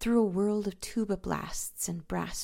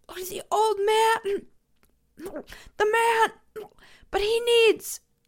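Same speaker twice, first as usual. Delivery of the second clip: very high, loud, shrill, gasping, choking outcry; 8 dB louder than usual. Sinking in the water, he cries out in a choking, gasping cry. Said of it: "Choking, gasping, he cried out".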